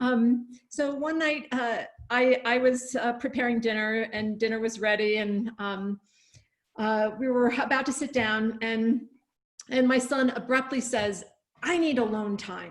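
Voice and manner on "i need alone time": put-on nasty, mean voice. Parent retelling what their son abruptly said before storming out, imitating a nasty tone. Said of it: "kind of in a nasty tone of voice".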